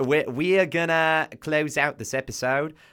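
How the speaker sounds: slow, put-on Australian accent.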